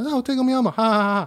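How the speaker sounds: high, laughing talking-toy voice-box voice. Retelling how a toy's voice box laughed: imitating Tickle Me Elmo toy. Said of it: "He'd go".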